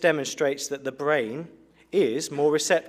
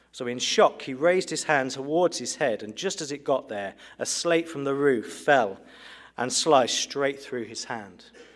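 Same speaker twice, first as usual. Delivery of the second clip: plain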